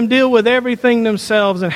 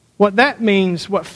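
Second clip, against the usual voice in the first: ordinary talk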